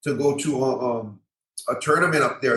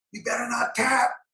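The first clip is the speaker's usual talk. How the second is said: put-on yelling, higher pitch; 10 semitones higher, 3 dB quieter than usual. Retelling a fight, imitating the wife yelling from the corner: imitating someone yelling. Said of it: "and she's yelling".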